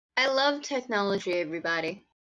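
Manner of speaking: tone dripping with sarcasm. Fighting with technology while running a game: sarcastic tone. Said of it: "feel the love for technology dripping off of my voice".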